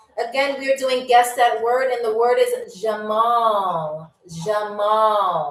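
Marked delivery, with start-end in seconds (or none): 4.5-5.6 Arabic pronunciation, lower pitch. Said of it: "if you were to say it in American English".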